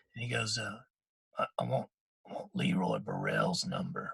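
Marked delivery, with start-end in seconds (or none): 1.4-4.2 halting, very low, creaky, strained, barely-there voice. Speaker retells his father asking someone for a number, imitating dad barely able to speak. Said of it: "That's how he kind of sounds now".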